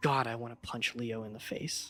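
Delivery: faint, soft, hushed half-whisper under the breath. Voicing a character's overheard thoughts as half-whispers: half-whispering. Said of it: "hear the sounds of whispering start saying".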